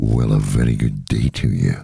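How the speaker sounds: very deep, low radio-announcer voice with gravitas. Showing the other speaker the gravitas their radio show had, in a radio voice with gravitas. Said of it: "the gravitas".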